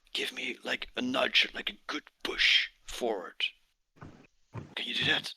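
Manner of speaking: breathy whisper under the breath. A character turns to a companion before the jump and asks, whispering. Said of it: "he whispers".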